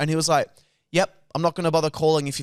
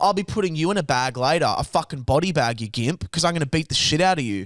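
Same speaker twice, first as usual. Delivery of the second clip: put-on tough menacing tone. Acting out what they should have said instead: mock tough threat. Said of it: "'Cause I'm tough".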